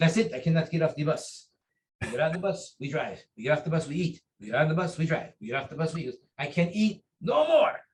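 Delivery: put-on French accent in a big guy's voice. Retelling a tiring seminar bus trip, imitating Master Ballet's French accent. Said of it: "He's a French accent. He goes".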